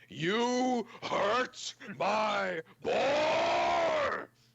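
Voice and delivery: very loud, very high, very slow, drawn-out orc roar. Letting out the true orc after the boar is hurt: true orc voice. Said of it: "let out the true orc in me".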